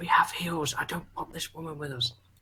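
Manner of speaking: hushed, very quiet, barely audible whispered aside. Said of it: "Why am I even whispering this?".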